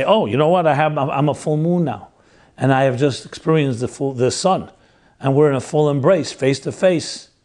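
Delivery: plain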